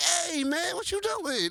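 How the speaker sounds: very high, startled voice. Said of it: "I was like".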